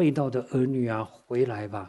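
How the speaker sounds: plain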